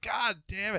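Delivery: put-on irritated outburst. Retelling editing a loud track and getting pissed: imitating own angry outburst. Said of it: "getting pissed at Malia".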